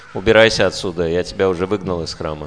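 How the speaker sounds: ordinary delivery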